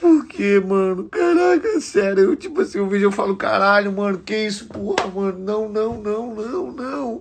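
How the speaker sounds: very high, loud speech through tears. Reacting just before sending condolences to Kevin's family, crying while speaking. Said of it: "eu tô chorando".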